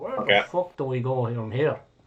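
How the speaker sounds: put-on said in a Scottish accent. Voicing a distant voice heard from outside the chamber: Jim's voice, Scottish accent. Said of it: "one of them is a Scottish accent".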